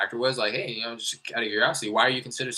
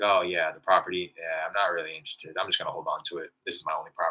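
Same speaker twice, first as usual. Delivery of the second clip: uninterested, disinterested, offhand tone; 5 semitones lower than usual. Retelling how a seller sounded on the first call: imitating a seller's uninterested tone. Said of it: "you can kinda hear it in the tone of his voice".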